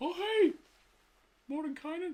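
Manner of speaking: very high-pitched cartoon mouse voice. Joking about a giant mouse statue, doing a Mickey Mouse voice. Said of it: "my impression of Mickey Mouse".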